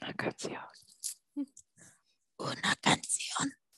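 hushed, threatening near-whisper. Teaching a learner a Spanish vocab word, the speaker repeats it menacingly.

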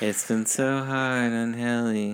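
sinister, eerie, hushed, creepy voice. Joking about what the characters will do next, speaker puts on a creepy voice. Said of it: "creepy ass voice".

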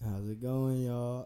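put-on, mock-sexy voice. Newly introduced on a podcast, a guest greets everyone in his sexy voice. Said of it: "Yeah, my sexy voice".

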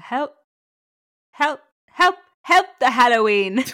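attempted Irish accent. After the other speaker's try, attempting the phrase again: attempted irish accent. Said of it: "your accents are very hard to do".

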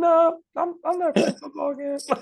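shrill, very high and very loud voice. Retelling what a retiring cornerback told teammates: imitating a high-pitched voice. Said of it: "this dude's voice is so high-pitched".

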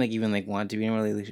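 rapid-fire, rushed rambling, way too fast.

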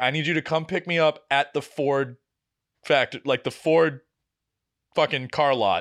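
ordinary delivery

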